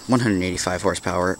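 normal talking voice

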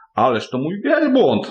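high, sudden, jolted exclaimed cry. A genie hears animals describe an idle creature in the desert, exclaiming. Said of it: "zawołał dżin".

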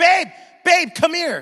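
shrieking, very high-pitched, loud scream. Speaker acts out how she calls him over to look, retelling a scream. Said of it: "she'll scream".

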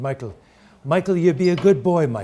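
put-on Irish accent. Quoting his father speaking to him as a teenager, in his Irish accent. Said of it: "in his Irish accent".

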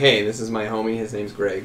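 ordinary delivery

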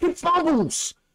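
high-pitched excited yelling.

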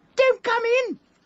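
nervous, squeaked cry, very high. Retelling what someone inside the bathroom squeaked out: imitating a high-pitched nervous voice. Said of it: "High-pitched, you know, and nervous".

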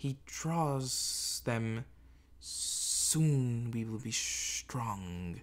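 very slow, drawn-out snake creature voice. Reading a story, voicing a second creature slithering past a door, in a reptilian voice. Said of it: "a second reptilian voice said".

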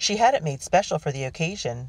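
ordinary delivery

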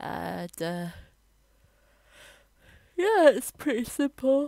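spoken through a big, very loud, high yawn. While explaining a simple step, the speaker is yawning while talking. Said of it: "Sorry, I was yawning".

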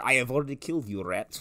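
soft put-on Russian accent on every word. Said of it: "now he's Russian?".

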